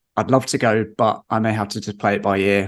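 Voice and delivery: ordinary talk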